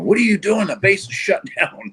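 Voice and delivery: play-acted, shrill, very high-pitched yell. Retelling the morning it snowed on base, imitating the gate guard's yell. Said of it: "guard at the gate was like yelling at me".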